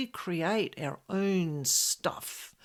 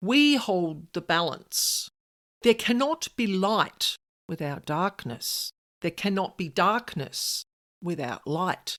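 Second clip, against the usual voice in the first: bold, proud, very confident tone; 3 dB louder than usual. Retelling what he said back in the conversation: retelling an even bolder voice. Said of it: "in an even bolder voice".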